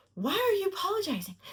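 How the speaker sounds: high, fast, nagging voice. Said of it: "the mind was saying".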